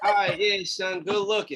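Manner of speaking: flat, offhand, unexcited delivery. Retelling a friend's reply to good news: imitating someone sounding unexcited. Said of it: "he ain't sound excited at all".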